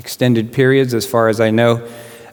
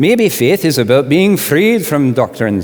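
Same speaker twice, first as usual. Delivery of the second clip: put-on Irish accent slipping toward Scottish; 4 semitones higher than usual. Quoting Peter Rollins, who is from Ireland: Peter Rollins impression, Irish accent. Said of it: "sorry, that sounded more Scottish".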